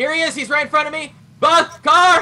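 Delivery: full-blast shouting, very high and very loud. During a firefight, calling out an enemy to a teammate; yelling. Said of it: "you're deafening me".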